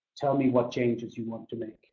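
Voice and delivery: flat, level, tuneless Finnish monotone. Showing how a direct question can sound like an order, flat finnish monotone. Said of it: "especially with the Finnish monotone style".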